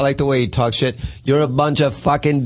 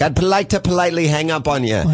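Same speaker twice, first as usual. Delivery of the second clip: cute, clumsy, bad put-on Canadian accent; 2 semitones higher than usual. Retelling how he politely ended the call, in a bad put-on canadian accent. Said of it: "so cute and Canadian for him to be like".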